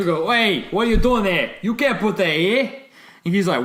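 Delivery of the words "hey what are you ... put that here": put-on pitched-up, clichéd stock Boston Yankee accent. Retell the challenge to a guy from Boston dumping a thing, in a cliched Yankee accent. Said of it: "two cliched Yankee accents going at each other".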